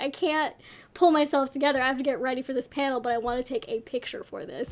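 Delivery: ordinary delivery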